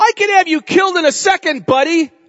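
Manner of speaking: very high, loud, strutting, pompous voice. A speaker retelling the Gospel scene acts out Pilate speaking to Jesus: mock-pompous Pilate voice. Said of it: "the pompous Pilate".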